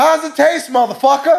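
shrill, very high, full-volume scream. Retelling a man confronting a guy over his beer, retelling Samuel L. Jackson screaming. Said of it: "he's just screaming everything".

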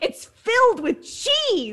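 put-on very high, swooping childish yell like five-year-old. Retelling a friend's reply about a corn dog: imitating her yelling like a five-year-old. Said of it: "And she yelled".

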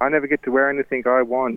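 high-pitched, upset, protesting scream. A father retells his daughter's reply when told she can't wear that, imitating daughter screaming. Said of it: "screamed the house down".

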